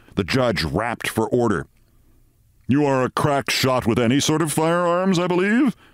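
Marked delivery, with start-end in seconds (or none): 2.7-5.8 sly, suggestive, insinuating tone, pitched up. The district attorney questions Walter Mitty in the courtroom, insinuating. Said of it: "said the district attorney insinuatingly".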